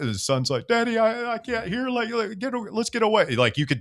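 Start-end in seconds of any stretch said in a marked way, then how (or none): 0.7-3.3 put-on scared, frightened little kid voice, pitched way up. Retelling a video where a son begs his dad to leave: imitating a frightened child. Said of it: "the fear in their voice".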